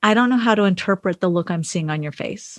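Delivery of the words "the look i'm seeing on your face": ordinary talk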